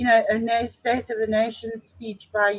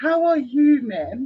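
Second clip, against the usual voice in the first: put-on hot-potato British accent; 3 semitones higher, 4 dB louder than usual. Retelling a man's greeting, done in a put-on british accent. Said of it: "British accent".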